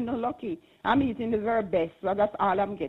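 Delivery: ordinary talk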